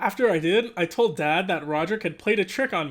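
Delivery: ordinary delivery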